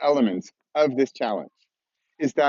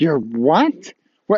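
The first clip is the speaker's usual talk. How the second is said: disbelieving, much slower; 4 dB louder than usual. Demonstrating how listeners might react to the course title, with negative disbelief. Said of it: "stick with the negative for a minute".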